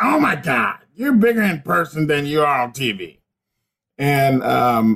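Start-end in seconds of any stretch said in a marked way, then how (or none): 0.0-3.2 rough, raspy, star-struck voice. Retelling meeting May backstage, imitating May's raspy voice. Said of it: "that raspy voice".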